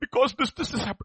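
play-acted high, weepy child voice, stammering. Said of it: "Why are you crying?".

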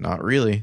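put-on quick, nonchalant delivery. Retelling a character's short reply to a question: imitating a quick nonchalant reply. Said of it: "he says it very quickly and nonchalantly".

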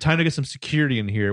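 ordinary talk, nothing marked

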